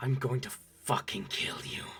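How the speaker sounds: hushed, soft, threatening growling vampire voice. A vampire inhales and threatens you, growling vampire voice. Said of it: "as he growls, baring his fangs".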